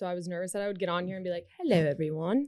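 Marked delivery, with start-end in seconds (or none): 1.6-2.5 put-on British accent. A first-time podcast guest shows how they talk when nervous, in a British accent. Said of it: "I start to like talk in a British accent".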